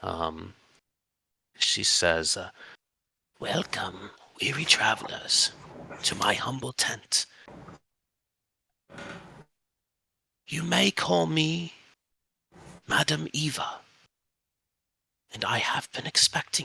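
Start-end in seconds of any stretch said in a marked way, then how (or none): 3.4-16.7 put-on high old woman voice. Voicing an old lady character who greets travelers, in an old lady voice. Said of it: "this is just an old lady".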